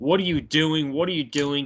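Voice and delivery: ordinary delivery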